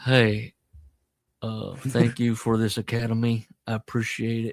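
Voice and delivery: slow, heavy, drawn-out drawl. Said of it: "he's doing like an [name] thing".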